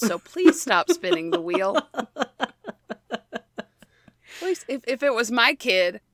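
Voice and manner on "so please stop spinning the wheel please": sweet, polite nice-mom voice, pitched higher. Speaker retells addressing someone else's child at a wheel, retelling in nice mom voice. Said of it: "I have to use nice mom voice".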